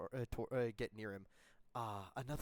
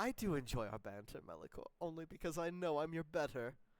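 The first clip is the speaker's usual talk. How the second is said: boastful, bold, taunting knight voice, pitched higher; 5 semitones higher than usual. Game master voicing a knight bantering with a rival knight, bold rival knight voice. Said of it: "given his boldness, / That's not what the ladies say".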